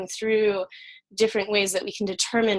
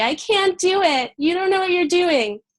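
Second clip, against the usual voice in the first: very high, whining, whiny little voice; 10 semitones higher, 5 dB louder than usual. Speaker voices her impostor-syndrome inner voice, in a mock-whiny little voice. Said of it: "that whiny little voice".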